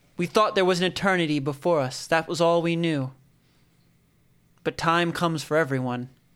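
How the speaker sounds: lordly, declamatory voice like a public oration. Game master voices a man addressing the townspeople from a dais, booming voice. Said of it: "his voice booming across".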